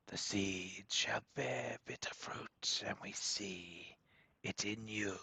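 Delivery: strange chorus of four voices speaking as one. Game master voicing a strange chorus of four voices addressing the players. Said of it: "a chorus of four voices say".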